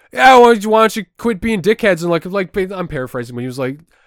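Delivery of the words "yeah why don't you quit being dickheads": put-on rudeness, much higher, louder. Speaker retells how a street performer taunted passersby, imitating a rude street performer. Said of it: "He was an asshole about trying to get people to watch him".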